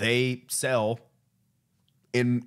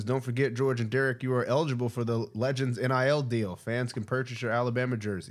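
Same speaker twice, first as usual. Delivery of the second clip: normal talking voice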